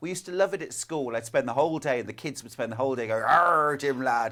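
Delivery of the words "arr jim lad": loud, put-on pirate voice. Speaker recalling kids at school on Talk Like a Pirate Day, pirate voice. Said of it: "Talk Like a Pirate Day".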